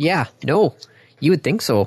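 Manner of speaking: thick, heavily laid-on Minnesota accent. Agreeing that the wires should be labeled: strong Minnesotan inflection. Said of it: "Whoa there, Minnesota".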